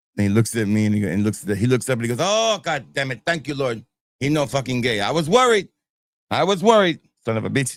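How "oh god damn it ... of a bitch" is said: put-on blunt, emphatic, exclaiming dad voice. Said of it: "so he would be real loud".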